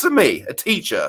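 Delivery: terrible, awful put-on British accent. Acting out Denim's pride at the teaching job offer: terrible British accent as Denim. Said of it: "that's a terrible British accent".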